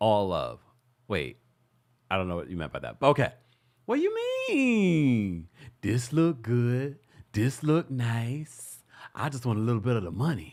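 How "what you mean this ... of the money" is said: mean, stretched-out words with swooping pitch. Answering a viewer's birthday request with an imitation of Sweet Tea. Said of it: "can you please do your imitation of Sweet Tea?".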